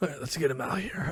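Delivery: speaking in a whisper. Announcing that the mixtaper should be brought out, whispering. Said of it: "Why'd you whisper that?".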